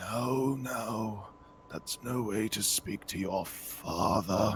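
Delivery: soft, very hoarse, rasping voice. Narrating a game scene, voicing the father heard inside a room, very raspy voice. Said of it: "very raspy voice is going".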